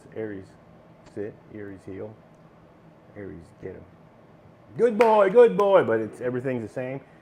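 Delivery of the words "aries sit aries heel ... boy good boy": calm, easy, unexcited, with sing-song praise. Giving commands to Aries, calm, not yelling. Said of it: "I can talk like this. ... I don't yell. I don't get excited".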